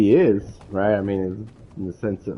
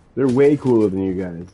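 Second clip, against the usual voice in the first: usual speaking voice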